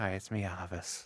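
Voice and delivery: mimicked tired, worn-out, resigned voice. Showing how the voice sounds by session's end: imitating a worn-out voice. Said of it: "my voice is just giving up".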